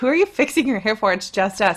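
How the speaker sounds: ordinary delivery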